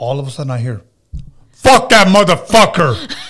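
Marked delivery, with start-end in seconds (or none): 1.5-3.2 put-on man-like demonic voice, higher and louder. Retelling a woman's threats overheard on a phone call: imitating a woman's man-like demonic voice. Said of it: "She had a fucking man fucking voice".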